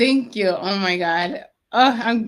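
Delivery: near tears, fighting back crying. Thanking someone after being welcomed to speak, holding back tears. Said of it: "I don't want to cry".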